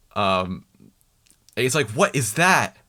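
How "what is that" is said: mock startled outcry, cried out in shock. Retelling a scene in which Jack starts yelling out: imitating Jack yelling. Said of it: "And he starts yelling out".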